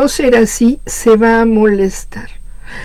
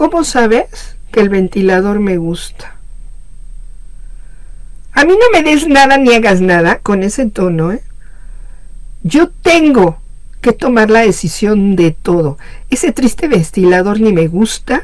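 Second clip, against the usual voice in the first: ordinary delivery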